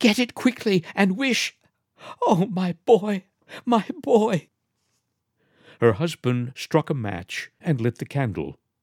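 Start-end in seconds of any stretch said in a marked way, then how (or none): 0.0-4.5 panting, pitched way up, very high. Narrator reads a woman urging her husband to get it quickly, panting. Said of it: "she panted".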